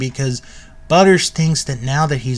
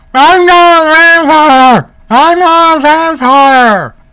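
shrill, booming, very high, drawn-out shouting; 14 semitones higher, 10 dB louder than usual. Retelling a plot where a captive kid yells from the trunk: retelling a yell. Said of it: "he's yelling".

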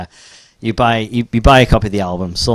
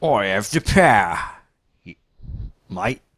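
exaggerated put-on Australian accent; 4 dB quieter than usual. Joking about Crixus playing He-Man, the speaker does the line as an exaggerated Australian Crixus.

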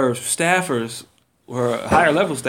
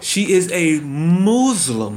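very slow, drawn out, word by word; 4 semitones higher than usual. Asked to say it slower, repeating the description of the activist very slowly. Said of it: "Say that slower".

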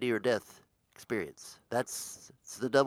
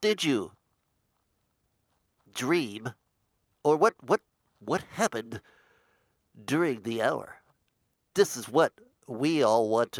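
louder, put-on dramatic actor voice; 4 dB louder than usual. Asking the other speaker what happened during the lost hour: sounding like William Shatner. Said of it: "Why do you sound like William Shatner?".

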